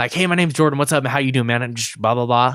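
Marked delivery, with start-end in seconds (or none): 0.1-1.6 super nervous, super fast, rushed rattling delivery. Retelling going up to introduce himself to get a job; retelling nervous fast talk. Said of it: "Super nervous, super fast".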